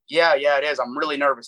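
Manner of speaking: ordinary talk, nothing marked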